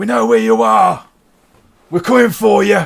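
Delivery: very high-pitched, very loud shouting. Voicing a thrown-off rider shouting after a departing carriage: shouting a threat. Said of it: "he just shouts".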